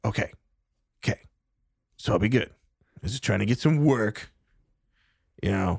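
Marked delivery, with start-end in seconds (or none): 0.0-4.3 put-on stuffy, congested sick-sounding voice. Voicing a stranger questioned about his name: put-on voice with a cold. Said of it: "He's like".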